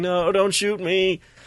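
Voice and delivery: put-on American accent, high, slow, drawn out. Retelling a villain posing as a hostage on the roof: imitating Hans Gruber's fake American accent. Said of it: "he puts on this American accent and he's like".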